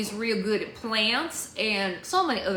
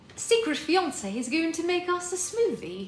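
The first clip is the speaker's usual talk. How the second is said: put-on British accent, pitched up; 8 semitones higher than usual. Speaker trying out a line in a British accent. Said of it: "It's really hard to say that in a British accent".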